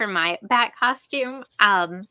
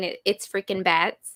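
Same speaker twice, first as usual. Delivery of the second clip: normal talking voice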